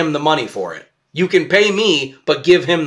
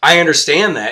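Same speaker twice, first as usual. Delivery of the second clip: mock attitude-filled man's voice. Retelling a homeless man's reply to a pizza offer: imitating a man with an attitude. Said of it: "kind of with an attitude".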